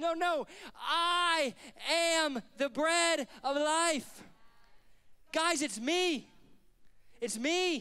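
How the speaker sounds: slow, emphatic, mock exasperated insistent tone. Speaker acting out Jesus turning to them in reply, mock-exasperated Jesus. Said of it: "I can almost hear the exasperation in Jesus' voice".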